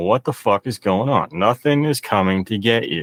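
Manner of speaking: ordinary talk, nothing marked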